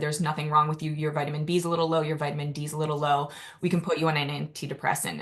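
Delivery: ordinary talk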